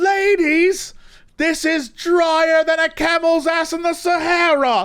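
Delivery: very high, drawn-out yell. Retelling Gordon Ramsay yelling at the red team: imitating Gordon Ramsay yelling. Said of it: "he was yelling at the red team".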